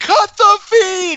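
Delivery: very high, slow, loud scream.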